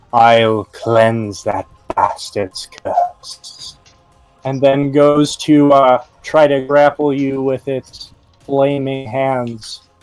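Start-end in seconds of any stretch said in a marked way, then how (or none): 0.1-3.7 low creature voice, stage whisper. Narrator voicing a spiked mace creature speaking to you, whispering creature voice. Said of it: "it whispers to you through its uh, mangled yellow teeth".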